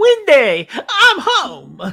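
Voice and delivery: booming, high, swooping voice. Doing a quote from The Shining: Jack Torrance quote as John Travolta. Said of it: "Jack Torrance quotes as John Travolta".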